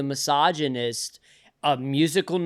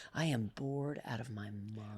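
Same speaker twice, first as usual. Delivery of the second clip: flat, low, very quiet deadpan; 5 semitones lower, 17 dB quieter than usual. Retelling being told to play it deadpan: imitating a deadpan delivery. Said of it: "deadpan will really serve us".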